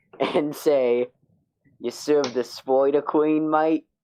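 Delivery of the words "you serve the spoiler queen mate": bad, exaggerated put-on Australian accent, pitched up. Looking Zundus dead in the eyes and saying a line, bad exaggerated Australian accent. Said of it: "put on the shittiest Australian accent I can do".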